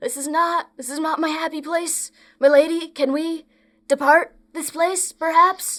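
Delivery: high, loud, whiny whimpering. A narrator voices a character speaking to his lady, whimpering. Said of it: "he's just sort of whimpering like".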